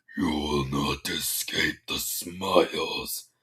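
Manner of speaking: very deep, very low, slow voice. Reading a story aloud, voicing Pinky with a menacing glare: far deeper voice than usual. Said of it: "in a voice far deeper than a usual tone".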